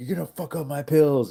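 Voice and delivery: very high, loud, terrorizing yell. Retelling how one person terrorized another: imitating someone yelling. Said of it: "yelling at him and shit".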